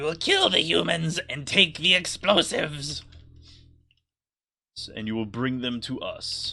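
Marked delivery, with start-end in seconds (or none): 0.0-3.0 high, loud goblin creature voice. Game narrator voicing an overheard goblin giving orders, in a high-pitched goblin voice. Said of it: "high high pitched goblin voice".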